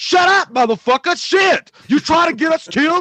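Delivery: high-pitched loud yell. Imagining a funny casting choice yelling at the survivors, as Samuel L. Jackson yelling. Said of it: "He could just yell at the survivors".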